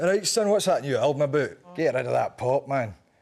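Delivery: put-on speaking with a Scottish accent. Showing how the dad would ask about the new album: imitating his Scottish dad. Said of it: "How would he talk to you?".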